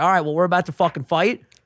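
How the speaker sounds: ordinary talk, nothing marked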